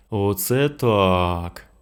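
drawled, dragged-out delivery. Narrator reads a character reacting to a story heard in the garden, drawled. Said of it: "протягнув Денис".

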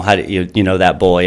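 ordinary delivery

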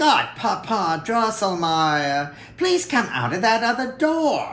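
eager, impatient, high-pitched cry. Narrator voices Fritz calling to Godpapa Drosselmeyer, crying out impatiently. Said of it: "Fritz cried impatiently".

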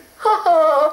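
giggling, high. A storybook fairy answering a caterpillar who greets her: giggling. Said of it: "giggled Mavis".

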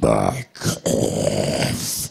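very deep, very low, rough monster growl. Retelling being asked at the microphone to do the creature: zoonoid creature voice. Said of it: "can you do the creature voice?".

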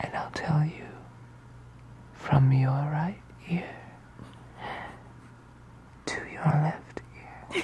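whispered, breathy, hushed ASMR murmur. Showing how people whisper into the camera in online videos: ASMR-style whisper. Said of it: "all they do is this".

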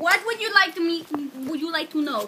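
very loud, bad put-on Indian accent. Starting a mock interview on a recording, in a bad fake indian accent. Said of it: "That is not an Indian voice".

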